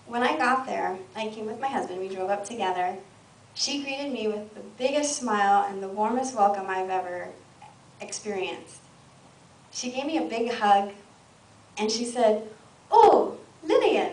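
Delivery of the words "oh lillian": put-on loud, welcoming, pitched-up Indian accent. Retelling how a woman greeted her on arrival, in an Indian accent impression. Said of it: "I'm doing her accent, it's Indian".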